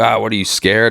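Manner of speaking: put-on mocking, teasing tone. Retelling how the framing company's bosses teased the speaker; retelling bosses' mocking taunt. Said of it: "they're all like breaking my balls".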